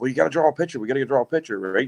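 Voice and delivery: excited, eager, all worked-up enthusiasm. Retelling what a lady said by a fire: imitating someone excited. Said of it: "Isabel was getting all excited".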